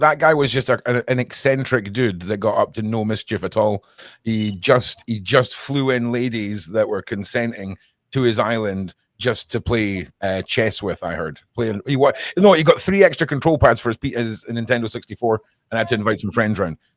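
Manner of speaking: ordinary talk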